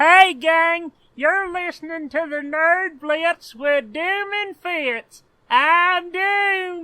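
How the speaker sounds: belted out high and loud. Opening the show with a Jonathan Winters voice. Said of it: "was that your Jonathan Winters voice?".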